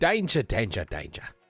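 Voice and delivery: put-on Australian accent. Asked to handle customers' floral arrangements, the speaker reacts in a put-on Australian accent. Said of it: "In the words of somebody with an Australian accent".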